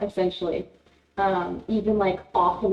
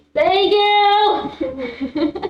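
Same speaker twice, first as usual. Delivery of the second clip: shrill, very high, loud shouted yell; 12 semitones higher, 7 dB louder than usual. Turning toward a party member and calling out in character: yelling. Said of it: "You don't need to yell".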